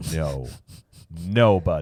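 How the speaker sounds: low, kindly put-on dad voice. Saying it nicer to a young child: put-on dad voice. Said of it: "I'll use my dad voice".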